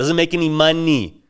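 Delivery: mocking, dismissive, condescending delivery. Retelling how a wedding guest shot down a question: imitating a condescending tone. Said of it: "He said it like".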